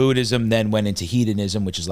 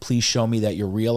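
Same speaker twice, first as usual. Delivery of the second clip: mock tearful, crying plea. Retelling praying on knees outside: retelling a tearful plea to God. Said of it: "I'm crying to God".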